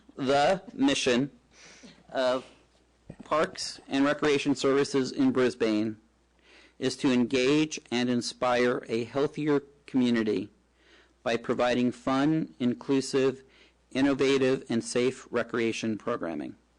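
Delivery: slow, deliberate reading with pauses between phrases. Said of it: "read it again slowly".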